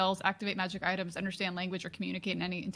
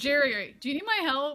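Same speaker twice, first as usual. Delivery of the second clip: high, loud, far-projected acted shout; 7 semitones higher, 6 dB louder than usual. Playing a character who calls out to Jerry: in-character shout. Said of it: "I'm gonna shout".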